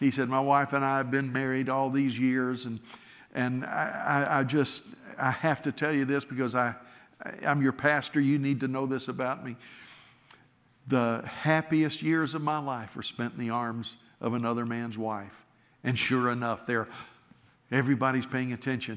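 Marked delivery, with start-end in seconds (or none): none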